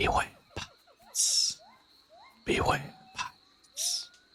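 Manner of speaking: slow, spooky, ghostly eerie whisper. Voicing unseen swamp creatures warning the party: eerie whispering voices. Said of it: "you start hearing the whispers again".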